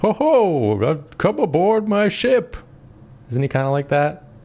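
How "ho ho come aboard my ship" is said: drawn out with pitch swinging up high. Answering how the captain sounds: Captain Crunch voice. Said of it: "Is that how the captain sounds?".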